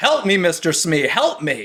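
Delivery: flat delivery, barely any effort. Mocking the dark ride's actor, the speaker does his half-hearted Captain Hook voice. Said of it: "not even like he's trying to".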